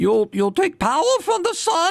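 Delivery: put-on very high, strange, angry old man accent.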